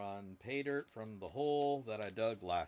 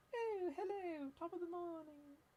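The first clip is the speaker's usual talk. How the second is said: very high, soft, light posh British accent; 6 dB quieter than usual. Imagining a friendly scale saying hello, in a British accent like Mary Poppins. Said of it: "if it said it in a British accent".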